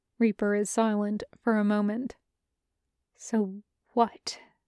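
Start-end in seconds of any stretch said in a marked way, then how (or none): 3.2-4.4 deathly quiet muttering, growing quieter. Reading a story aloud, a character's line: deathly quiet mutter. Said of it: "mutters in a deathly quiet voice".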